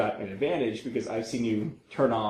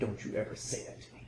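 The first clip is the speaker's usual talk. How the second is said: intense, dead-serious, menacing whisper; 12 dB quieter than usual. Recounting how a man looked the speaker dead in the eyes: mock super intense warning. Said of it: "he just got like super intense".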